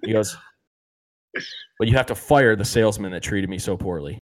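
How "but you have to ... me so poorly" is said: plain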